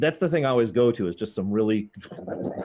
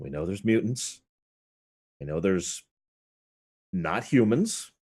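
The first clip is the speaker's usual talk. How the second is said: speaking with the voice brought low; 2 semitones lower than usual. In character during a scene, saying the line in a lowered voice. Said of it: "lower my voice".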